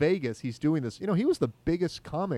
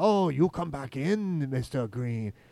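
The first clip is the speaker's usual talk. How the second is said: slow, put-on Chinese accent. Retelling a comedian's chinese restaurant joke: imitating a chinese restaurant worker. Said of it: "you know how they're like".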